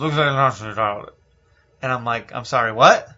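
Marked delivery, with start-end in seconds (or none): 0.0-1.1 muttering, mumbled half to himself. Retelling what a man said while walking away, retelling a mumble. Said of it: "walking away and mumbles".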